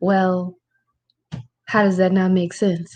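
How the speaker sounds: plain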